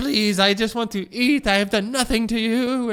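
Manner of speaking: mock scream, loud and high, begging tone. Recounting a hurt kid begging not to be hit; retelling a kid's screaming plea. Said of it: "And he's screaming".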